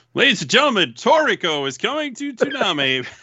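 very high, breaking-news announcer style voice. Doing a mock breaking news announcement when asked: breaking news announcer voice. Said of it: "do breaking news into this podcast".

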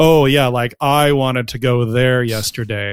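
slow, openly sarcastic tone. Showing how people sound when being sarcastic: sarcastic tone. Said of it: "change their tone of voice... when they're being sarcastic".

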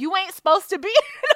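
high-pitched speech with laughter.

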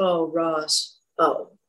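play-acted sorrowful, grave, low, hushed tragic tone. Retelling parking at night as Mario greets the speaker; imitating Mario's tragic tone. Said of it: "And like this tragic expression".

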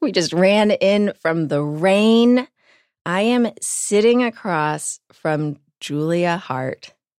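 puffing, winded, out-of-breath talking. Podcast host opening the episode after running in from the rain, out of breath. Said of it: "I am out of breath".

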